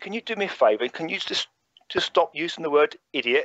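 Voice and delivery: bone-dry, dead-straight, deadpan delivery. Retelling a request made to a man in a room: retold deadpan delivery. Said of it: "I did it really deadpan as much as I could".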